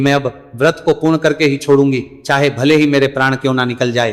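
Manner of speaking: usual speaking voice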